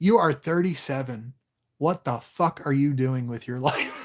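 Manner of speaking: imitated stern tone. Retelling what an advisor said about a plan: imitating Doctor Obongo, stern. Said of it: "a real stern African man".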